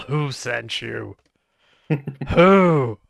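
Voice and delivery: booming, very loud, bellowing voice. Narrating a character who pins someone down and interrogates her, in a Batman impression. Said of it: "I want Home Run's best Batman impression".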